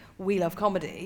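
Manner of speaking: plain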